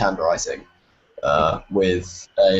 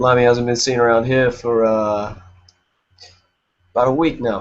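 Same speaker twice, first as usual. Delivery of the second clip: silly, feigned, put-on New York accent; 4 semitones higher than usual. Playing a bartender answering someone asking for Mister Limey, in a feigned New York accent. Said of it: "I'm gonna feign a New York accent".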